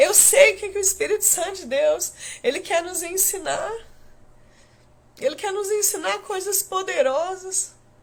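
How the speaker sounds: close to tears. Speaking to the listeners right after saying so: almost crying. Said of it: "eu tô quase chorando aqui".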